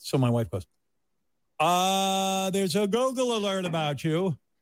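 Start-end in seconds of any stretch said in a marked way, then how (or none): 1.6-4.3 leisurely, slow, high delivery, drawn-out uh. Quoting the wife about a Google alert: Oprah voice. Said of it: "now he's doing the Oprah voice".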